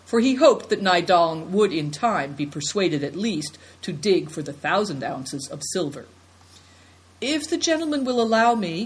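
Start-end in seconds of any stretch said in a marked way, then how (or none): 7.2-8.8 meek, hesitant, timid, slightly high. Affliction asks the gentleman's permission to speak, timid. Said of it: "said Affliction timidly".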